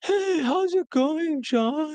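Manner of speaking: very high, very drawn-out, depressed, slow sigh. Describing how broke people greet women in conversation: imitating a depressed voice. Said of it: "they sound very depressed".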